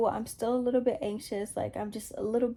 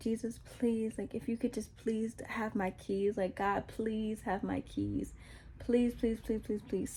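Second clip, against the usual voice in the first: put-on soft, desperate pleading; 6 dB quieter than usual. Retelling losing their keys, the speaker acts out crying out to God: retelling pleading prayer to God. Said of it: "So I'm crying out to God".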